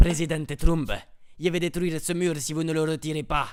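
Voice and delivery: high, put-on Mexican accent. Narrating a story, voicing the hero confronting President Trump: El Castratros Mexican accent. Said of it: "vous êtes sûr que c'est une bonne idée de lui faire cet accent".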